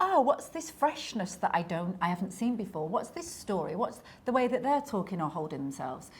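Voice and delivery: ordinary talk, nothing marked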